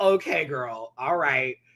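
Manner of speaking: mock cackling, slowed. Recounting a moment between Olivia and Audrey, imitating Audrey cackling. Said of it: "Audrey just starts cackling".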